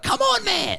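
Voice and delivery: very high-pitched, hyped-up, excited yelling. Doing the podcast voice used when excited: mock-excited Dan Rosario impression. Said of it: "my Dan Rosario impression ... It's when you get excited ... like that".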